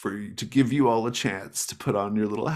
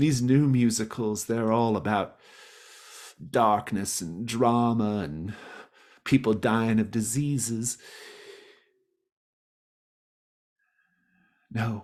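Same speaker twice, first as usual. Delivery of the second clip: tearful, wistful, voice on the edge of tears. Voicing Dolores, who has tears in her eyes: tearful. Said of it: "she's got tears in her eyes".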